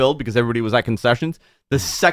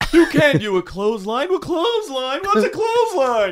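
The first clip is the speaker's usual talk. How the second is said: very high pitch, deliberately done badly; 14 semitones higher than usual. Riffing on wrestling as Seinfeld characters: terrible Jerry Seinfeld impression. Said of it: "Your Jerry turns into the Cowardly Lion".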